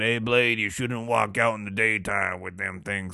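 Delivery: put-on old-school country man voice. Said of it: "he's like that".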